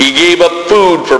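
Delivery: ordinary delivery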